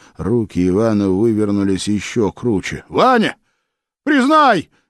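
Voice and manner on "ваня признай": very high-pitched, called-out cry. Narrator reading Philip's cry to Ivan as his arms are twisted, shouted. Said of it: "крикнул Филипп".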